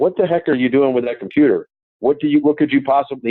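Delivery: sour, annoyed, grumpy coach voice. Retelling what the coach asked in a bad mood on the plane: imitating Tony in a bad mood. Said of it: "obviously not in a very good mood".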